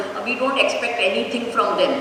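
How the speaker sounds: ordinary talk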